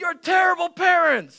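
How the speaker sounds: very high, shrill, very loud shout. Retelling how a woman in a car yelled at them: imitating a woman yelling. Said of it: "she yells something like".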